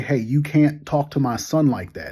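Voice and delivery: ordinary talk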